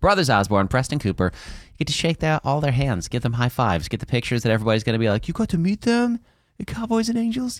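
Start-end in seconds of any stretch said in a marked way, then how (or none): 5.3-7.6 put-on English accent. Imitating people asking about meeting the artists: put-on english accent. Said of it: "Why does everybody have an English accent?".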